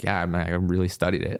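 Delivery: ordinary delivery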